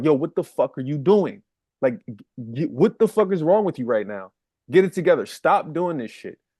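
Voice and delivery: stern, firm scolding tone. Demonstrating talking to yourself out loud: stern self-scolding. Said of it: "just getting stern with yourself".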